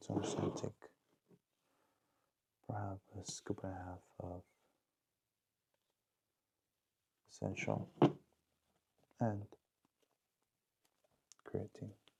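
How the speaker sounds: whispering a little. Talking at 3:45 a.m. while the roommate sleeps, whispering a little. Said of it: "I'm whispering a little bit".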